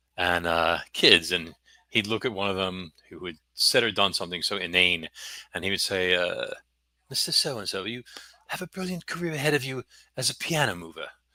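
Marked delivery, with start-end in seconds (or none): 7.1-11.1 put-on a touch of English accent, pitched up. Recalling a high school teacher addressing a student; English accent. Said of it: "he had an Eng bit of an English accent".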